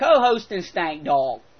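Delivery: horrible, bad put-on Australian accent. Reading out a listener's email from australia, in a horrible australian accent. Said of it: "I'm going to do a horrible Australian accent".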